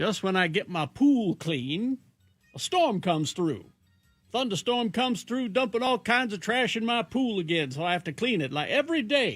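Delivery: put-on Louisiana southern accent. Reading a listener's letter about moving to louisiana: put-on southern accent. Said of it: "I'm gonna do this in a proper accent".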